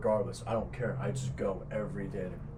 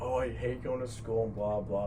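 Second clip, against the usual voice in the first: usual speaking voice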